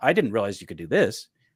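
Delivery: ordinary delivery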